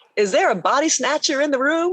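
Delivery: put-on very high-pitched, teasing Tennessee accent. Retelling a general's reply in conversation: imitating his Tennessee accent. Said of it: "he looked at me with that Tennessee accent".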